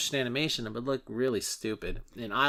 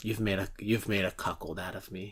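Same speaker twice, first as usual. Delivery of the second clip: put-on deadpan delivery, lower pitch; 5 semitones lower, 3 dB quieter than usual. Retelling a film scene line by Bill Murray: deadpan Bill Murray delivery. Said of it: "deadpan, just says".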